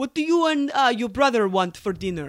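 accent that sounds Russian. Taking turns trying out accents, in a Russian-sounding accent. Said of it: "That's Russian".

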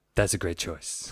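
breathy, hushed star voice, near whisper. Picturing Deadpool giving a thumbs up: Ryan Reynolds impression. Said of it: "That's my Ryan Reynolds impression".

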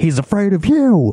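mock, very high shouted yell. Retelling yelling back at a man who was yelling at RFK, retelling a yell. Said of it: "And I yelled back".

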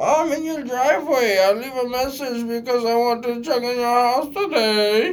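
shrill and loud, put-on German accent. Speaker acts out Luana leaving a message from the driveway: imitating Luana, German-sounding accent. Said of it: "I don't know why I did that accent".

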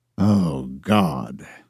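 low, heavy groaned exclamation. A man groans when asked about a woman he dated last year: groaning. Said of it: "he groaned".

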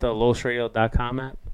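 flat, uninterested delivery.

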